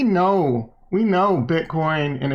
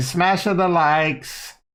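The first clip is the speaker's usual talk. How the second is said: badly done, terrible put-on Kazakh accent. Saying a catchphrase the way Borat would: Borat voice. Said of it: "How would Borat say it?".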